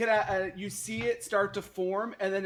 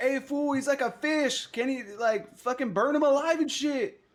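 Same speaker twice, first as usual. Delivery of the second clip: high, rowdy hollering yell; 6 semitones higher, 3 dB louder than usual. Taking a free action in the game, yelling at A Task. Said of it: "I'm gonna yell at".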